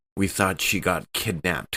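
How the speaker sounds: normal talking voice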